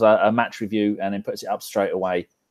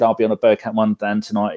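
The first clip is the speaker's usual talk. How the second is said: plain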